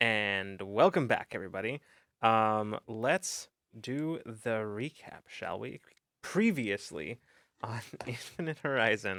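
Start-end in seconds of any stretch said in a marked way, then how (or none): 6.2-9.2 laughter spilling into the words. Host starting the episode recap for listeners, laughing while speaking. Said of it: "I'm laughing".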